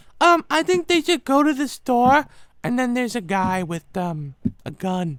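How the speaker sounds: put-on very high, loud small child voice. Describing asking a toddler for episode ideas, voicing the kid's answer: imitating a little kid. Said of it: "And have a kid be like".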